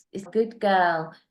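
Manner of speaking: delighted, super happy tone. Speaker demonstrates how they praise their dogs, in a dog-praising tone. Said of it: "when I'm praising my dogs".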